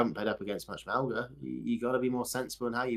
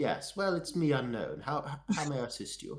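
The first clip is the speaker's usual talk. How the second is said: put-on posh rich English accent; 5 semitones higher than usual. Playing a character on request from the group, posh rich English accent. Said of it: "Do like posh, rich English".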